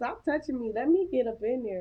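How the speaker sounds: ordinary talk, nothing marked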